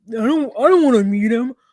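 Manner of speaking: dumb mocking delivery. Retelling how he refused to meet him: mocking his stupid delivery. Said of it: "he does this stupid".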